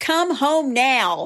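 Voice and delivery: loud, forceful, authoritative, commanding delivery. Retelling how a woman confronted a man at another woman's table: retelling a loud command. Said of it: "Like really loud and commanding".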